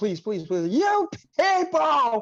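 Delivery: play-acted, high-pitched pleading, repeated pleas. Imitating a caught racist trying to negotiate: imitating someone pleading. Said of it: "they try to nego-, negotiate".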